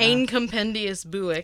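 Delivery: slow, bad, unconvincing attempted Scottish accent. Reading an old Scottish book title aloud: attempted Scottish accent. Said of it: "That does not sound Scottish at all".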